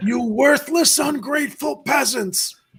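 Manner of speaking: gravelly rasp. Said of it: "fourteen pack, uh, raspy voice impression".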